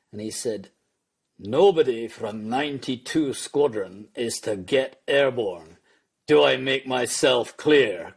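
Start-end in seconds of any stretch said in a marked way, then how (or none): 1.3-7.9 put-on thick Scottish accent. Retelling the squadron boss's radio order: imitating boss's broad Scots accent. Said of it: "who had a broad Scots accent".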